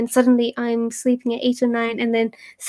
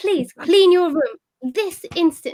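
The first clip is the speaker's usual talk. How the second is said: unconvincing stern voice, pitched up; 6 semitones higher than usual. Trying the request again more firmly: stern telling-off voice. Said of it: "That was really bad".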